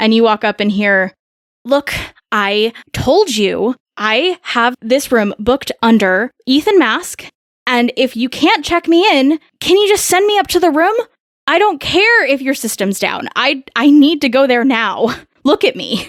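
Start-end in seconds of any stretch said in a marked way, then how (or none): 1.6-16.1 heated, insistent, demanding arguing tone. A woman at check-in argues with the receptionist: arguing with the receptionist. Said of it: "seems to be arguing with the receptionist".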